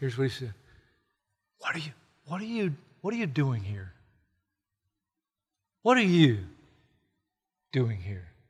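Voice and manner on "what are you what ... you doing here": soft, hushed half-whisper. Retelling God's words to Elijah in the cave: half-whispering as God. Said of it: "God said to him in a whisper".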